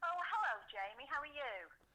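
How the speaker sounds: fake posh voice. A radio guest greets the host on air, put-on posh voice. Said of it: "That was a lovely posh voice you put on there".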